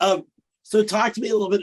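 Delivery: voice breaking mid-phrase, cracking and jumping high. Host asks the guest to talk a little, voice cracking. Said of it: "Wow, my voice cracked".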